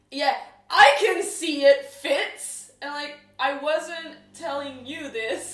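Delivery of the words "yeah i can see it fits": very loud, slow, high, drawn-out yelling. Retelling the other speaker snapping back: imitating someone yelling. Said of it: "you turned around and yelled at me".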